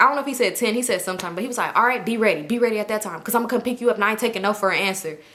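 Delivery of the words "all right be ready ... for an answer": put-on aggressive talking. Retelling a friend's phone call: imitating someone talking aggressively. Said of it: "the way he was so aggressive".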